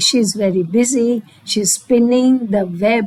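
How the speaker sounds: plain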